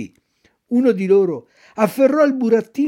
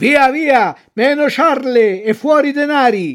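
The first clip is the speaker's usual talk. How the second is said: high-pitched, menacing, threatening shout; 5 semitones higher, 4 dB louder than usual. Two robbers demand money from a puppet, shouting threateningly. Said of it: "gridavano minacciosamente".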